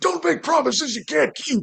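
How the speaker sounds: high and rough yelling. Retelling what gets yelled at passing cosplayers: yelling in Muscular's voice. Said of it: "I will yell at them in Muscular's voice".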